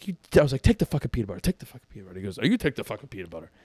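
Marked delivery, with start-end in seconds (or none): 0.0-2.2 acted angry outburst, mock anger. Retelling an argument with someone; retelling an angry outburst. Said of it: "I'm just going off".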